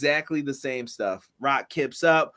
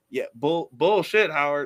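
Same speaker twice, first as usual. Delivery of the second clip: normal talking voice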